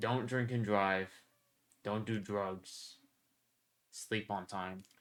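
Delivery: preachy, lecturing classroom teacher tone. Asked for a memorable outro, the speaker gives viewers advice: lecturing like a teacher. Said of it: "you just sound like a teacher".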